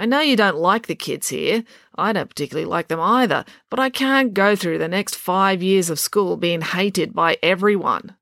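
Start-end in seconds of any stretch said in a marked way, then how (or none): none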